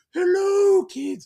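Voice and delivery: high, shrill, loud puppet voice. Showing a listener what their puppet sounds like, in Petal the puppet voice. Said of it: "Sort of like a Marge Simpson, Mrs. Doubtfire cross".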